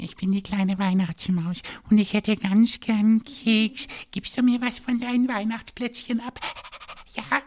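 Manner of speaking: very high and sweet. Performing a line after being asked for a sweet character: very sweet character voice. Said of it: "Kannst du eine ganz liebe Figur sprechen?".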